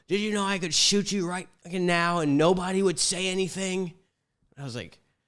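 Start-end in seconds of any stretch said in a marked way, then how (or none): 0.1-3.9 put-on snapped scream, pitched up. Recounting a man pointing a gun at him and screaming, retelling a scream. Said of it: "screaming at me".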